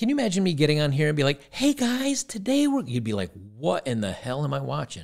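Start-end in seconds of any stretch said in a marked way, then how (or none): 1.5-2.8 very high, drawn-out third-grade teacher voice. Criticizing a woman's way of talking to adults, mocking her voice inflection. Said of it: "the whole point of the voice inflection".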